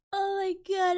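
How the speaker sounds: cracking up laughing until teary. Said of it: "I'm crying a little".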